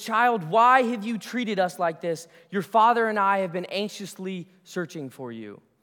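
stern, strict, reproachful scolding voice. Acting out what a mother would say to her child, imitating a stern mother. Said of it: "She would say in a stern voice".

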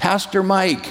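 play-acted, very high-pitched hollering shout. Retelling someone calling out from across a grocery store: imitating Ron yelling. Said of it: "he yells".

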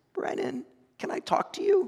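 tiny, very high squeak. At 3 a.m., a nun at the door asks brennan to talk, squeaky little voice. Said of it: "a squeaky little voice".

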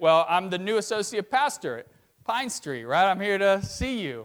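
ordinary talk, nothing marked

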